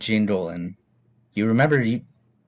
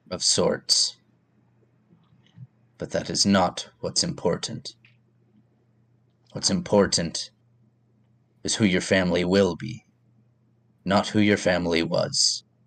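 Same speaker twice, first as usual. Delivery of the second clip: very deep, tremendous, jolting, booming voice; 3 semitones lower than usual. Voicing a medallion that speaks to the character: very deep, tremendous, jolting voice. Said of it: "in a very deep, tremendous, almost jolting voice".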